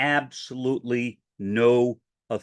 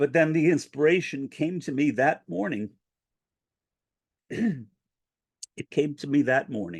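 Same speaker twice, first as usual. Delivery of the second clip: choked up, emotion breaking through, voice catching; 4 semitones higher than usual. Speaker recounting a prayer for inspiration, getting choked up. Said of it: "I'm sorry for getting choked up".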